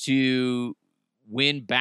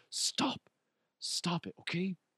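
mock-embarrassed kid voice, much quieter, slower; 5 semitones higher, 12 dB quieter than usual. Speaker acts out a kid whose parents whisper praises to him, acting out embarrassed kid. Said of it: "he's embarrassed as fuck".

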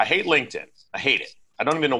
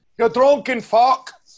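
put-on Irish accent, higher and louder; 8 dB louder than usual. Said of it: "yours is good".

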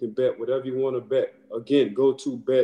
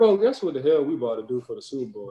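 sarcastic, swooping sing-song tone. Retelling telling a son about Super Bowl tickets: imitating own sarcastic tone. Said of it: "in a sarcastic way".

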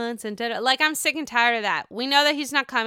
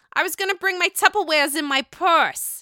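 put-on Staten Island accent, pitched up; 6 semitones higher, 4 dB louder than usual. Quoting Danielle's line, her quote of the week: Danielle's Staten Island accent. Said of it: "I have the Staten Island accent down".

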